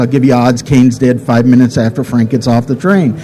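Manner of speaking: ordinary talk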